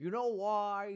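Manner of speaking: put-on loud old sage voice. Quoting a wise old writer from a movie: Sean Connery impression. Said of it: "excuse my Sean Connery impression".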